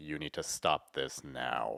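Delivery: deep, very slow, drawn-out, intimidating voice. Describing Bruce Wayne in the Arkham games, do a deep Kevin Conroy voice. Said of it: "it's a lot deeper".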